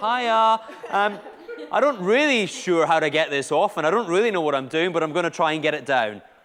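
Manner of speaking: loud, jittery, nervous intercom announcer voice. Speaker imagines a pilot speaking over the plane intercom; mock-nervous pilot voice. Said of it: "some sort of nervous voice comes on and goes".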